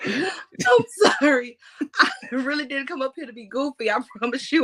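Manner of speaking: laughing through words. Apologizing to a co-host for being goofy, laughing while talking. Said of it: "but you got me laughing".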